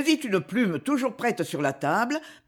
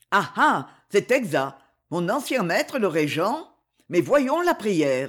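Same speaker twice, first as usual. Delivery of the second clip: ordinary delivery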